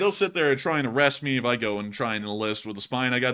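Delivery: ordinary delivery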